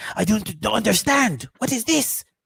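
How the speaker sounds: little, shrunken voice with French accent. Showing the little voice used for the French version, little voice with French accent. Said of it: "that's what the French people sound like".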